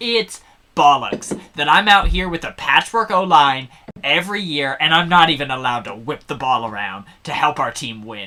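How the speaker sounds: acted-out, fed-up, angry, British-style swearing. Imitating a football player complaining about his team: angry Russell Wilson impression. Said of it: "when he's actually angry, he swears like a British person".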